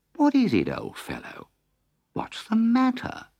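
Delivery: very high, kindly concerned, sympathetic voice. Rat speaks to Mole, who is crying openly: quiet and sympathetic. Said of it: "said very quietly and sympathetically".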